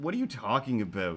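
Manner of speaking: ordinary delivery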